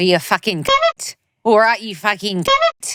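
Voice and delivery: terrible New Zealand accent. Reading a message aloud at her request, worst kiwi accent possible. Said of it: "read that aloud in the worst Kiwi accent possible".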